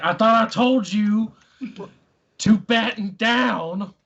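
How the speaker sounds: loud, high-pitched hollering yell. In character as the captain, answering the crew: yelling back. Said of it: "And I'm gonna yell back".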